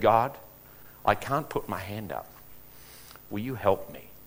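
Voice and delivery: murmured under the breath. Retelling a prayer once said quietly: imitating saying it under his breath. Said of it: "I said that under my breath".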